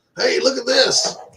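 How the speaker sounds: acted-out hollering. Imagining discovering extraterrestrial life: acting out hollering at the top of lungs. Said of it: "hollering at the top of my lungs".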